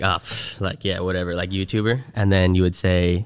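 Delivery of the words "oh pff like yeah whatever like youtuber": put-on dismissive, scoffing snort. Retelling how people reacted to hearing "youtuber": imitating a scoffing snort. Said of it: "in a little snarf".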